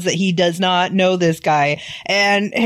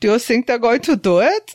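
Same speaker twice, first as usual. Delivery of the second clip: put-on German accent; 4 semitones higher than usual. Repeating another speaker's line, put-on German accent. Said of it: "I'll do it in German accent".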